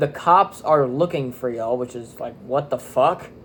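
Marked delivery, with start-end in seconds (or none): none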